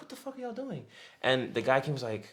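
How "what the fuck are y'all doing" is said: mock baffled, very high-pitched confused outburst. Retelling what a woman said to strangers in her house: imitating someone confused. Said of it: "she was confused".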